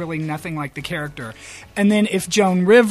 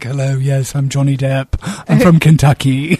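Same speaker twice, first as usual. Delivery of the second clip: loud, raised, laid-on fake British accent; 4 semitones lower, 6 dB louder than usual. Mocking a celebrity's put-on accent: imitating Johnny Depp's faux British accent. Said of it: "faux British accent".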